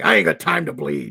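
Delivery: rough, raspy put-on tough voice, movie hero style. Quoting a line from The Predator, the speaker does a Jesse Ventura impression. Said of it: "I will try to emulate Jesse Ventura from The Predator and say".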